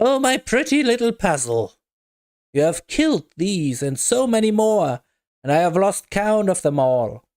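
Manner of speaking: voice laced with cackles breaking in. A game master voices the voice that breaks in on the player again, cackling voice. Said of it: "The cackling voice breaks in once again".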